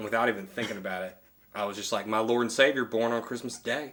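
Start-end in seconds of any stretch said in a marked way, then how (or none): 2.1-3.9 put-on southern US twang. Retelling what they said to him without even thinking, in a southern accent. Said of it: "With like a southern accent and everything".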